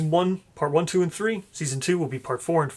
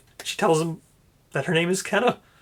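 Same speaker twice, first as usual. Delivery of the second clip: ordinary talk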